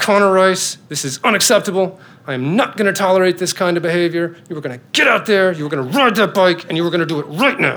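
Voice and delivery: put-on stern dad voice. Dad retelling what he says to his kid, retelling stern-dad scolding. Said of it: "Stern Dad".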